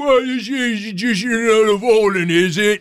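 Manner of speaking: put-on Cockney accent. Imagining how a pet dog might talk: put-on cockney accent.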